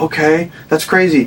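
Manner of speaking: plain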